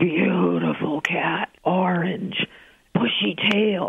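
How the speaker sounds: put-on speech on a smoky exhale. Retelling a psychic's answer on the phone: imitating speaking on a smoky exhale. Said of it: "she inhales and she exhales and she says".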